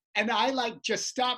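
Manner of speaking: ordinary talk, nothing marked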